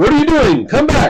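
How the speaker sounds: very high, loud, hailing yell. Voicing a character leaning out a tower window: shouting. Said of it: "and shouts".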